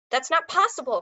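sudden exclamation. Narrator reads a character reacting to a snake wrangler's report: exclaimed. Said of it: "Curly exclaimed".

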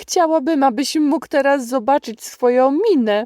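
genuinely amused, high-pitched delivery. Mrs Silas greets the pastor as he walks in, exclaimed, genuinely amused. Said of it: "wykrzyknęła szczerze rozbawiona".

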